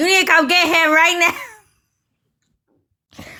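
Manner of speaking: acted angry scream, very slow, high, drawn-out. Retelling a grown man screaming from the kitchen; retelling a scream. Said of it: "he's screaming from the kitchen".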